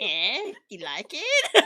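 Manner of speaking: very slow, stretched delivery with swooping pitch. Showing a learner how the villain sounds: Doctor Doofenshmirtz voice. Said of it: "He always has that, like, that".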